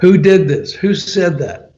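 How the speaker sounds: acted-out, angry, demanding, furious screamed outburst. Recounting screaming at the guy who blocked the record, retelling a furious scream. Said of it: "I'm screaming at the guy".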